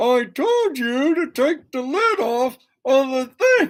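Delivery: high-pitched, mad, spoken through the teeth. Describing how his wife talks when mad, imitating Kim talking through teeth. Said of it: "Kim talks through her teeth when she's mad".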